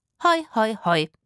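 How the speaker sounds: bone-dry, a bit loud. Zora answers Rufus, who has just spoken sure of victory, dryly. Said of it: "sagte Zora trocken".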